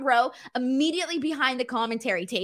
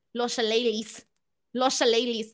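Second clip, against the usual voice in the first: Spanish-accented pronunciation. Asked by a listener to say shillelaghs with a spanish accent, spanish accent. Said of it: "can you say shillelaghs with a Spanish accent".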